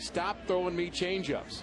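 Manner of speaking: mock, high-pitched, mild half-yelled complaining gripe. Retelling a batter's words while running to first base: imitating someone screaming. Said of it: "he's screaming at me".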